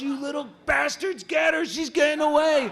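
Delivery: high, loud, frantic screaming yell.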